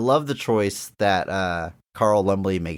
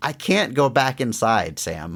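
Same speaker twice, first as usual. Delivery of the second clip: slow, choked-up, tearful pleading tone. Retelling a movie scene, quoting the character's line: imitating a tearful line. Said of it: "through tears".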